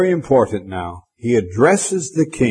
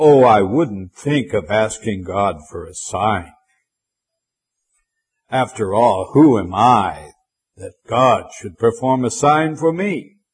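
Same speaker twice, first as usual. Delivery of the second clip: sulky, petulant, falsely humble, fake-pious tone. Retelling a hypocritical king's reply about asking God for a sign, mock-petulant king.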